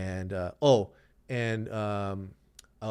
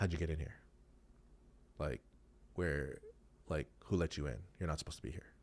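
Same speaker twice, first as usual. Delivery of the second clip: stern, serious tone, lower and quieter; 6 semitones lower, 11 dB quieter than usual. Retelling how an owner confronted the speaker: imitating a serious tone. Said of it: "really serious tone".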